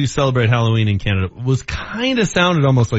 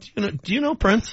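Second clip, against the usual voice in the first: put-on naive, clueless tone, pitched up; 7 semitones higher, 6 dB quieter than usual. Mimicking how the other speaker asked the question: imitating someone's dumb-question tone. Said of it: "The way you said it kinda sounded like".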